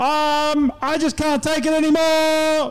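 put-on puppet voice. A puppet answers the hosts about a bad week, Lionel puppet voice. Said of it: "one of my favourite puppets".

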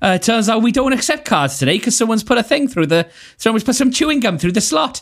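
imitated Welsh accent. Saying cards aren't accepted because of gum in the slot, put-on welsh accent. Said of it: "That was my attempt at a Welsh accent".

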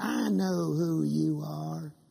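creaky, slow, rough, possessed demonic voice. Retelling a chained man's words as the speaker approached him: demonic voice. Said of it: "he said in this demonic voice".

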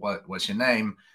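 plain

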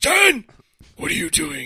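high-pitched, loud growling voice. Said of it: "The whole growl and everything".

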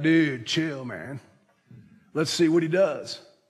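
laid-back, loose surfer-dude voice. Retelling a movie scene where the turtle answers Marlin, in Crush surfer-dude voice. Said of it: "That's a fantastic impression".

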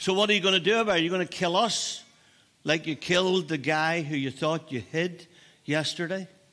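imitated sarcastic, taunting tone. Retelling two fighting boys answering Moses: imitating a sarcastic retort. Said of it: "they speak to Moses with sarcasm".

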